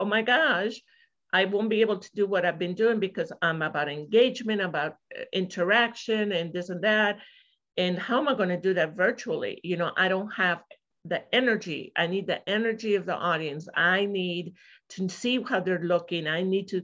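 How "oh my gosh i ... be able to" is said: usual speaking voice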